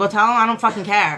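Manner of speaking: ordinary talk, nothing marked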